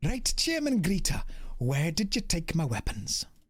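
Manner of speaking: put-on Welsh accent with every other syllable stressed. Playing Boone, the speaker addresses Chairman Greta in a Welsh accent. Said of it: "Boone is now officially Welsh".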